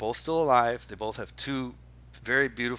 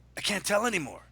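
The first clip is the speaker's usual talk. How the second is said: mock raw, worked-up angry rant, very high; 9 semitones higher than usual. Telling a co-host about a man's rants, imitating an angry rant.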